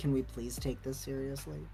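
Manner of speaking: quiet, level, put-upon robotic monotone voice. Imitating a tired, put-upon character asking the group to be serious. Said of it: "this guy just going".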